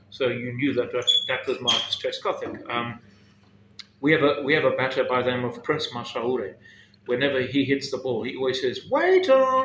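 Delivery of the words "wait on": very high-pitched, piping, raised voice. Retelling what a batter always says after hitting: high-pitched voice. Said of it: "in a very high-pitched voice".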